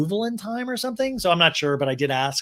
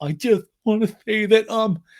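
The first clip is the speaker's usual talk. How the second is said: trembling, wavering, shaking voice, pitched up; 4 semitones higher, 4 dB louder than usual. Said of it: "Sandoval's voice shaking".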